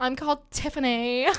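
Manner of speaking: put-on mean high school girl voice. Playing a mean girl from an american high school movie: mean high school girl voice. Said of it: "the mean girls that are like".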